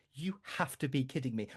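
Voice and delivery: acted-out furious voice. Retelling failing a timing game, imitating own past fury. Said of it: "I was so furious".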